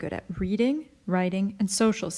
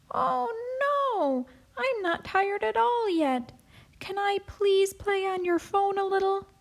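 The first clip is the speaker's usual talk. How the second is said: put-on very high, squeaky little-baby voice, pleading; 12 semitones higher than usual. A child playing house pretends to be the baby, answering the mom: squeaky baby voice. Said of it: "asks [name] in a squeaky voice".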